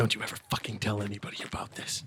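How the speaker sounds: very quiet in-character whisper, close to ear. Playing a character who whispers a warning into Baldy's ear: whispering in character. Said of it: "I whisper into Baldy's ear".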